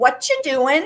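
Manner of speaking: put-on high, small child's voice. Retelling what everyone heard answer back, in a little kid voice. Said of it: "in a little kid voice".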